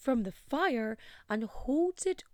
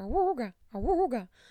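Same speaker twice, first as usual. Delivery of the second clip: vocal imitation of a siren; 4 dB louder than usual. Before a trigger warning, the speaker does a siren impression. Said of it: "That was my impression of a siren".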